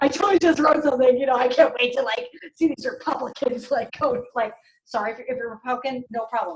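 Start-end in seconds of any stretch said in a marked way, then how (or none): 0.0-4.2 excited, eager, thrilled can't-wait gush. Retelling how Ryan comes home after posting: imitating Ryan sounding excited. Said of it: "so excited".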